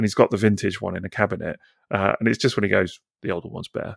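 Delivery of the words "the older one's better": acted mutter, much quieter, lower. Retelling what a man said about his vintage toy, retelling a mutter under breath. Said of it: "Like really under his breath".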